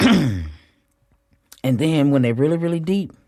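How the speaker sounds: slightly choked-up, catching, emotional voice. Describing patients' deep wounds, slightly choked up. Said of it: "I got a little choked up about it".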